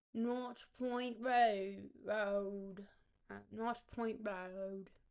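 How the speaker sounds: very slow, wobbly, bad Australian accent. Saying the road name, attempted Australian accent. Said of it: "pretty good in an Australian accent".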